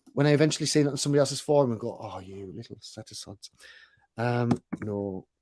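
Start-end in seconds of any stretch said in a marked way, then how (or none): 1.9-3.4 very soft, slow, upset muttered grumble. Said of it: "I was so upset when".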